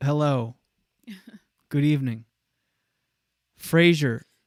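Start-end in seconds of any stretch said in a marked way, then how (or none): 0.0-2.2 put-on mock robotic voice. Showing how sounding careful about "um" comes out: put-on robot voice. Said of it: "you can tell I sound like a robot".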